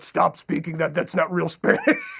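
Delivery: put-on angry voice. Retelling how the old man reacted to his Spanish: imitating his old man getting pissed. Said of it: "he would get pissed".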